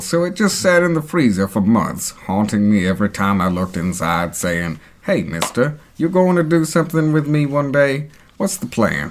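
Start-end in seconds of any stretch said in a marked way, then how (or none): 5.0-9.1 put-on cute, adorable little baby cow voice. Acting out the frozen veal talking to the speaker, adorable baby cow voice. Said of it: "A really adorable baby cow voice".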